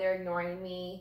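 ordinary talk, nothing marked

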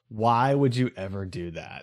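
low, soft, tired, exasperated sighing voice.

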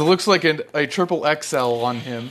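normal talking voice

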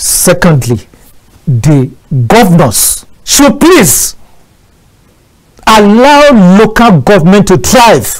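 angry, emphatic voice. Making a second point to the host, in a raised angry voice. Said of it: "you're raising your voice because of that, with emphasis".

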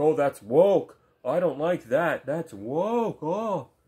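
very loud, slow, mocking dumb-bro drawl. Imitating Halo YouTubers who complain about things: mocking imitation of Halo YouTubers. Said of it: "they seriously talk like this".

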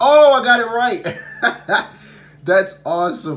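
excited, thrilled whoop.

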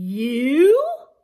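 very loud, drawn-out, astonished "you". The caterpillar replies to the polliwog, surprised. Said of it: "The caterpillar was so surprised she almost fell into the pond".

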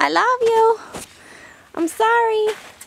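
put-on very high, cooing baby talk.

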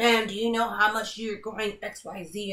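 strict, stern, authoritative tone. Retelling a police officer's question after a traffic stop: imitating a stern police officer. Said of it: "all stern like this".

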